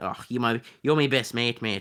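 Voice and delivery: terrible fake Welsh accent. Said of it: "that was a terrible attempt at that".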